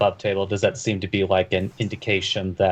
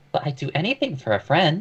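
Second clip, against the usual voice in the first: high, swooping put-on woman's voice; 8 semitones higher than usual. Voicing a character's follow-up line in a game: put-on woman's voice. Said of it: "in something like in a woman's voice".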